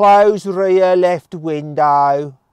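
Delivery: really strong Midlands accent, very loud and high. Testing whether a car's voice system understands accents, give it a command in a really strong Midlands accent. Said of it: "I'm going to do a really strong Midlands accent".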